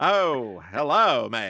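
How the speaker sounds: polite, put-on mid-Atlantic accent. Speaker shows off their mid-Atlantic accent: mid-Atlantic accent. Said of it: "This is my mid Atlantic accent".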